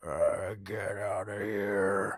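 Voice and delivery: very low, guttural throat voice. Retelling the strange voice heard after assuming it was the kids, guttural voice. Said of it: "like that guttural noise".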